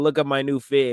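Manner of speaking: normal talking voice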